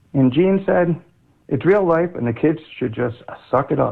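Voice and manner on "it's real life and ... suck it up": plain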